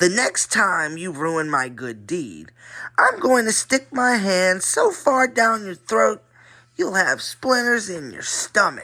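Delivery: high-pitched, rasping ventriloquist-dummy voice. Reading a story where the dummy threatens Stella, in Slappy's rasp. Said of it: "he rasped".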